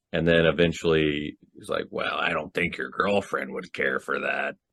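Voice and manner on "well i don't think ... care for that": low, hushed, quiet killer voice. Retelling a man's reply to a woman flirting on the phone: Ghostface voice impression. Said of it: "pretty much a spot on ghost voice impression".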